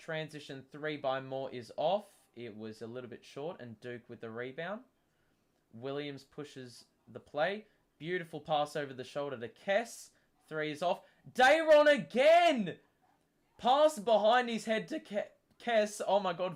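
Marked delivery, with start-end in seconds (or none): 11.3-16.0 voice breaking up high and loud. Calling a basketball play as the pass goes to kess, voice cracking. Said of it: "voice crack central here".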